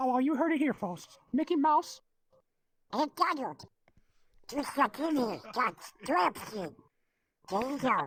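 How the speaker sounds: pitch goes way up and bounces around. Wrapping up a Twitch show episode on request, doing a Mickey Mouse voice. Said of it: "can you do an imitation of [name] as Mickey Mouse?".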